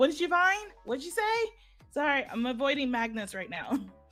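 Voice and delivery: high-pitched voice, calling out. Voicing a character calling up a hill to companions: calling out. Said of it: "calls out".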